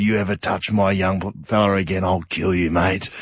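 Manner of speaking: grumbly, threatening voice. Recalling the captain grabbing an opponent by the jumper: Chris Judd's grumbly voice. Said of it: "in this grumbly voice said".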